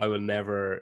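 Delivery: ordinary delivery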